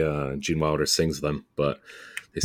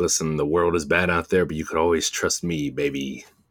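normal talking voice

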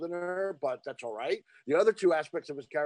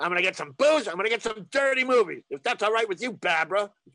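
put-on New York voice, higher and louder; 4 semitones higher, 5 dB louder than usual. Quoting a favorite Kelly's Heroes moment: imitating Telly Savalas. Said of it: "him going".

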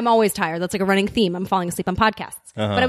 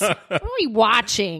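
mock grumpy complaining whine, slow and swooping. Retelling own complaint a quarter into the movie: imitating own cranky complaint. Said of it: "I was cranky".

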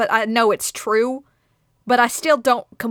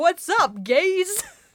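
high, casual, tossed-off, wannabe-cool tone; 7 semitones higher than usual. Imagining the Twenty-one Jump Street guy with a skateboard: imitating the Twenty-one Jump Street guy. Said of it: "just being like".

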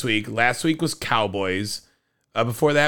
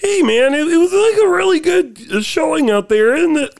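mock teen voice cracks, much higher; 8 dB louder than usual. Showing others how to mimic someone's voice, imitating puberty voice cracks. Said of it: "the like puberty voice break".

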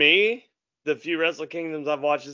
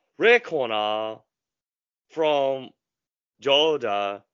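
Japanese wrestling ring announcer voice. Announcing the hosts for the show intro: japanese ring announcer voice.

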